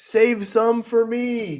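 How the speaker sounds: very high shout, called out. A tabletop player's character calls out to the party, shouting. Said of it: "He he shouts out".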